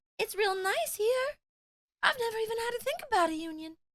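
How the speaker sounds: airy, very high-pitched voice. Acting out a Microsoft figure talking about unions, in a breathy Phil Spencer voice. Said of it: "you doing a breathy voice".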